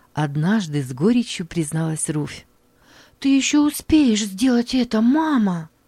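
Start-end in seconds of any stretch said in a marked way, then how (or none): 3.2-5.6 agitated, eager, excited pitched-up exclaiming. A daughter answers her mother's bitter confession, excited exclamation. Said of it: "взволнованно воскликнула Мари".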